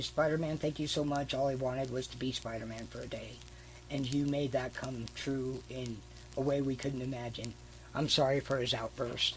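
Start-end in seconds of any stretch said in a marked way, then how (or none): none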